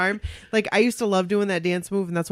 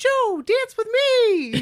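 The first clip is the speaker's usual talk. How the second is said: very high puppet-like squeal, me drawn out; 4 dB louder than usual. Retelling how she yelled out when everything went quiet, retelling a Muppet-like yell. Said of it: "You sound like a Muppet".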